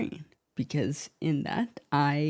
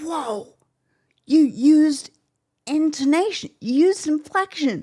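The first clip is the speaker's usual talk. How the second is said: high, loud, amazed exclamation. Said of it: "they were like".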